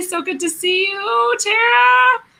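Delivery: high, sing-song voice.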